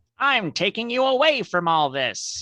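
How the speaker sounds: very high cartoon villain voice, pitch swinging wildly. Asked to read what the character says, do it in your Skeletor voice. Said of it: "read what he says in your Skeletor voice".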